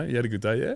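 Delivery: pitch rising high on final yeah. Describing how Australians finish sentences: rising pitch at sentence end. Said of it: "we like to finish our sentence with like a high pitch, ... sounds like a question".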